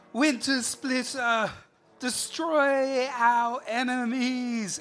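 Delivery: booming yell, very high, very loud, drawn out. A game character calls out as the tree starts to move, yelling at full volume.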